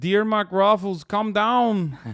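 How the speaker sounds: put-on loud, high, heavy Brazilian accent. Quoting a fighting message to Mark Ruffalo, voicing Bolsonaro in a Brazilian accent. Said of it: "I'm doing a very specific Brazilian accent".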